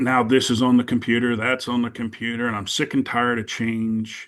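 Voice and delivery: ordinary talk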